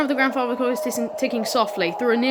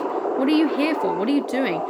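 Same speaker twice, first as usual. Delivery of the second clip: ordinary delivery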